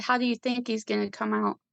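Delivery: mocking, sarcastic delivery. Retelling the doctor's answer to her mom's question: imitating a sarcastic doctor. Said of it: "sarcastically said".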